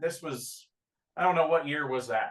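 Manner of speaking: plain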